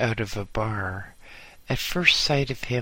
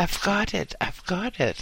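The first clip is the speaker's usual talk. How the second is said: high-pitched cry, full of excitement; 8 semitones higher than usual. Reading a story aloud, voicing a man who just drove up: excited cry. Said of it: "he cried, all excitement".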